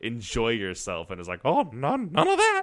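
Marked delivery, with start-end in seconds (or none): 1.4-2.6 cartoon mouse voice, much higher, slower. Chatting about Kingdom Hearts, a speaker does a Mickey Mouse voice. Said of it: "your Michael Mouse voice in this".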